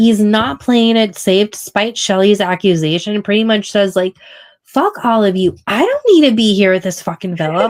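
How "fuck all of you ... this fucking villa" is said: mock hot-headed, fired-up, heated outburst. Recapping a contestant telling the others he doesn't need them: Chris, fired up and heated. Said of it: "I am getting fired up".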